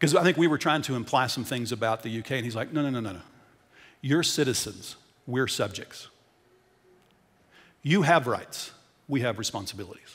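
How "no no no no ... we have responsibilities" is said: mock grave, utterly serious delivery. Retelling what a scottish lord said at dinner: imitating someone speaking very seriously. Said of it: "very seriously says".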